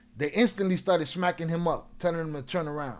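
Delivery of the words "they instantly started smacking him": usual speaking voice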